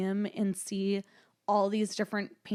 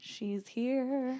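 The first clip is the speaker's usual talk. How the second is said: put-on creepy horror-film tone, higher; 4 semitones higher, 4 dB quieter than usual. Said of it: "That sounded so creepy".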